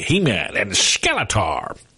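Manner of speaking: wide, swooping cartoon villain voice. Reading weekend box office results: Skeletor impression. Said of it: "That was a pretty good Skeletor impression".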